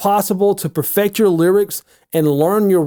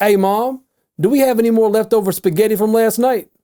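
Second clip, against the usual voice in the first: higher, raised voice carrying across room, not yelling. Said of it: "Pretend that you're speaking, not yelling, to someone that you can see across the room".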